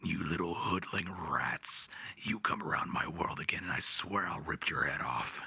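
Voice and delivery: low, menacing, threatening demon voice. Showing how he performs the demon's voice for a friend's game: demon voice. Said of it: "he likes me to do the demon's voice".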